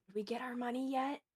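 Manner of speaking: soft, low, hushed half-whisper. Playing Alexander while the mayor shouts for Cedric, the player is half-whispering. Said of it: "Alexander just kind of whispers".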